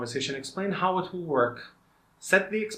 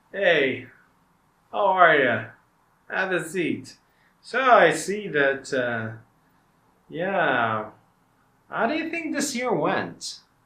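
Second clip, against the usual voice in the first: sugary false friendliness, dripping with sarcasm; 3 semitones higher, 3 dB louder than usual. Showing how a manager might greet an employee for an end-of-year discussion, sarcastic, fake-friendly. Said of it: "This sarcasm, this fake smile".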